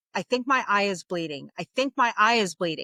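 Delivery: ordinary talk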